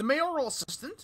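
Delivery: plain reading voice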